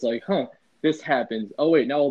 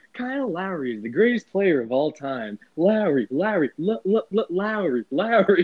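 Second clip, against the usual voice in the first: put-on robotic text-to-speech voice, higher; 6 semitones higher than usual. Retelling how a voice-chat member talked through text-to-speech: imitating Kermit's text-to-speech voice. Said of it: "he would just go on text-to-speech".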